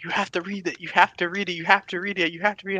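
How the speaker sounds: high, insistent, badgering scream, repeated. Speaker recalls being urged over and over to read a book: retelling a scream. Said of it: "Taji was just screaming at me like".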